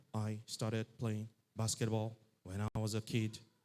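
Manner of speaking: low, flat, dead-level robotic monotone. Imitating Shaquille O'Neal answering an interview question: flat robotic voice. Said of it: "It sounds like a robot".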